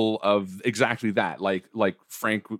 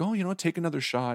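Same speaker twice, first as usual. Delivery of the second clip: hearty, friendly, jovial cheer, pitched up; 7 semitones higher, 5 dB quieter than usual. Retelling a film character's line during archery: imitating a jovial tone. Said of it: "this really jovial".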